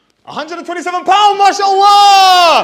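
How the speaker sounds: shrill, very loud, high, excited. Retelling a mosque donation, the speaker imitates the man announcing it loudly and excitedly. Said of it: "keep it down, keep it down".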